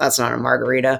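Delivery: put-on low muttering. Speaker quotes one of his bartenders, retelling Phil Ward under his breath. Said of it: "sort of under his breath in the very Phil Ward way".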